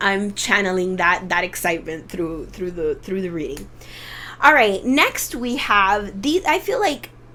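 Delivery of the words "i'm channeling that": normal talking voice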